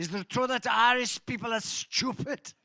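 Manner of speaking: comic put-on German accent. Telling a joke about a seatmate on a plane: German accent. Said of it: "it had a German accent".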